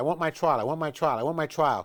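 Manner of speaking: ordinary talk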